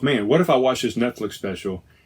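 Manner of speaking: ordinary talk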